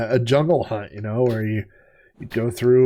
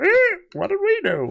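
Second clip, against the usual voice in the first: very high, bird-like parrot voice. Imagining zoo monkeys answering after being beaten up, parrot-like voice. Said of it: "That was more of a parrot voice".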